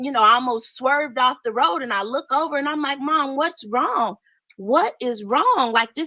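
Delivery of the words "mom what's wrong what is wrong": frightened, alarmed, concerned voice. The speaker retells the mother suddenly screaming during a drive: retelling a scared outcry. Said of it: "and it scared me".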